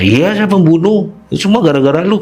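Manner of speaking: defiant voice.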